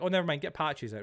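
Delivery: ordinary delivery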